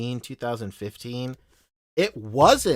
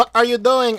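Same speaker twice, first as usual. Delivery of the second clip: half-hearted put-on Filipino accent, pitched way up, loud; 10 semitones higher, 8 dB louder than usual. Speaker quotes a parent's question after admitting the accent fails: attempted Filipino mom accent. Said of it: "I can't do it".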